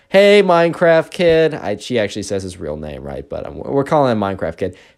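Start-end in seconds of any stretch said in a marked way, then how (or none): 0.1-1.5 animated, loud, pitched-up fake call. Retelling a girl calling out to a classmate: imitating a loud call. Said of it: "very loudly".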